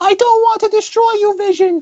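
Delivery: bad, fumbled, very high Eastern European accent. Retelling a movie scene, voicing her reply, Wanda's bad Eastern European accent. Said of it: "I can't do an Eastern European accent".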